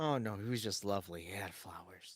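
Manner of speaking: put-on, heavy, dripping, most sarcastic tone possible. Quoting Lux's reply about him, imitating a very sarcastic tone. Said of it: "It's just like the most sarcastic tone".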